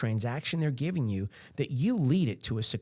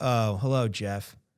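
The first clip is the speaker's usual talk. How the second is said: falling voice inflection, pitch dropping lower; 3 semitones lower than usual. Acting out a business answering a phone call: falling voice inflection. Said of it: "so the voice inflection goes down".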